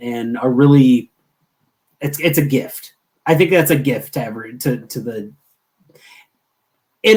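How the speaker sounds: halting, stuttering speech, tripping over words with restarts. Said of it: "sorry I apologize about the, the stuttering on this".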